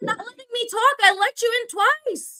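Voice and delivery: shrill screaming, pitched very high. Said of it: "stop screaming".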